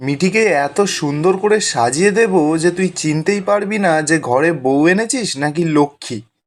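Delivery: normal talking voice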